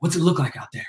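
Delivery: nervous, anxious, jittery delivery. Retelling a nervous question backstage after a hype set: imitating a nervous French Montana. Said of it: "looking around all nervous".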